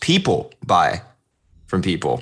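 "first people" strongly stressed, hit hard. Flipping a common saying, stress on first people. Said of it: "put the emphasis on the first part".

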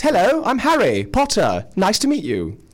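high character voice with swooping, swinging intonation. Asked to do the voices, he drops his Scottish brogue for a Harry Potter voice. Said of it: "for Harry, he'd be a bit more like this".

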